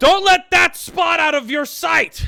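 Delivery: high, loud, commanding barked shout.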